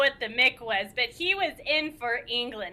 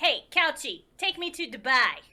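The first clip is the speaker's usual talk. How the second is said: put-on New York accent. Telling a story, the speaker voices Jason's line in a New York accent. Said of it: "different New York accent".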